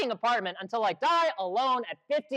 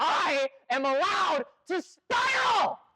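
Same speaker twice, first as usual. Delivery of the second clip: very slow, high, drawn-out, furious yell; 6 semitones higher than usual. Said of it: "you guys do need to quiet down".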